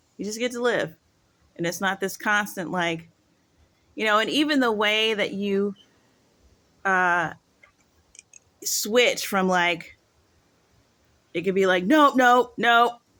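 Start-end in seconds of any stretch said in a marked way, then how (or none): 11.9-13.0 firm, stern, loud no-nonsense nope. Showing the switch in tone used when correcting him, stern, loud voice. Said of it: "stern, stern, like voice and all of that, loud".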